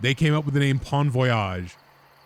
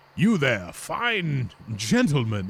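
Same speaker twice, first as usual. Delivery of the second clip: slow, drawn-out put-on storybook character voice; 3 semitones higher than usual. Speaker quotes a character's line, doing a put-on voice for the character. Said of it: "I don't know why I'm doing a voice for this guy".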